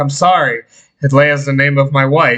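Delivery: ordinary delivery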